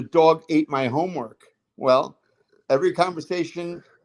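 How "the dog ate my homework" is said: ordinary talk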